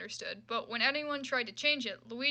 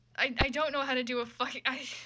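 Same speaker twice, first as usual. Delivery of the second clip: plain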